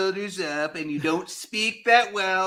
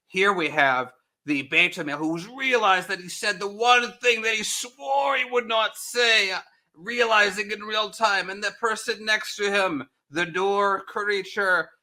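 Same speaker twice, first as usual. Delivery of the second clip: fake Australian accent, documentary narrator style. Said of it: "I have to go Australian to make it work".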